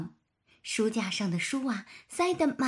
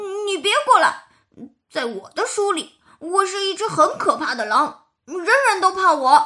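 very loud, high, put-on ferocious yelling; 9 semitones higher, 10 dB louder than usual. Reading a picture book, voicing the wolf who shouts, pretending fierceness: fierce shout, faking menace. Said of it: "狼装出凶狠的样子， 喊着".

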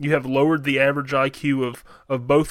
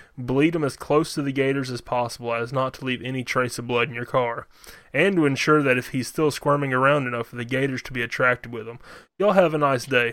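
ordinary talk

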